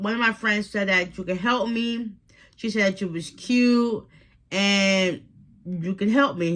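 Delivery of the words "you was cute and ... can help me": normal talking voice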